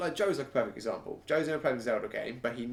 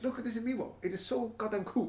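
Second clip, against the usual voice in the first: bad put-on Japanese accent, pitched way up; 11 semitones higher than usual. Mimicking Nintendo showing off an Amiibo, in a bad Japanese accent. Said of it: "Your great Japanese accent".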